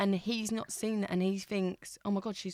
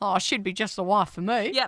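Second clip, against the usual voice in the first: loud put-on Australian accent; 7 dB louder than usual. Speaker announces going Australian for the line: Australian accent. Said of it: "I'm going to go Australian".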